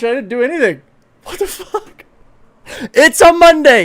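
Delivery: yelling. Talking to viewers as a game launches by itself, yelling. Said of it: "sorry, I'm yelling".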